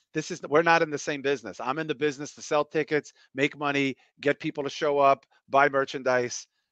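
ordinary talk

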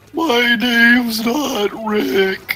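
very high, drawn-out, deliberately badly done put-on voice. Doing an impression that you then admit was off, a really bad Patrick impression. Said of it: "That was a really bad Patrick impression".

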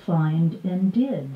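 ordinary delivery

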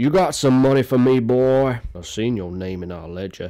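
put-on frontier cowboy voice. Talking about a game you play yearly, quoting a line from it: Arthur Morgan cowboy voice. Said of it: "I speak like a cowboy".

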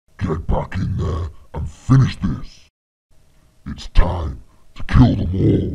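booming demonic devil voice roaring at full volume. A character orders someone back in to finish the job: demonic voice. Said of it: "sound like the devil / demonic".

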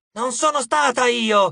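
full-throated, loud, high, drawn-out shout. Narrator reads Eris answering a voice that called for Mom, shouting. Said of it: "urlò Eris".

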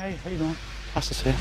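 quiet, soft, low-pitched, polite at-home voice.

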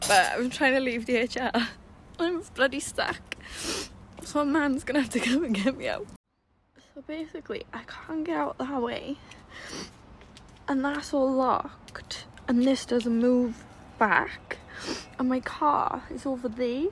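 frantic, high, soft voice through tears. Stuck in a car park, recording a video for the girls she's travelling with, crying. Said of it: "this isn't funny because I'm crying".

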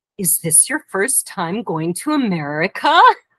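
mock condescending, as if talking to a small child. Retelling what an older man in the airport line asked: imitating a patronizing tone. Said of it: "he said very patronizingly to me".

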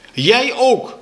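furious, high, breathless angry outburst. The narrator answers back to the teacher in class, cried out breathless with anger. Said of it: "riep ik buiten adem van kwaadheid".

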